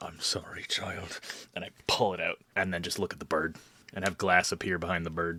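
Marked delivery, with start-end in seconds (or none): 0.0-1.2 whispered speech. Playing a character running an enemy through: whispering. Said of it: "just whisper into his ear".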